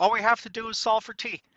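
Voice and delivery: wry sarcasm, pitched very high. Explaining a hard equation step to a class: sarcastic. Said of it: "I'll be a little sarcastic".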